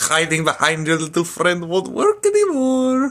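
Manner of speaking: high, loud, swooping, bouncy, hammed-up cartoon voice. Doing an impression from Lilo and Stitch: Jumba Jookiba voice. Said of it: "my impression of Jumba Jookiba from Lilo and Stitch".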